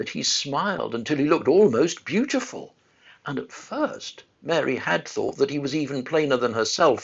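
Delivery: ordinary delivery, nothing marked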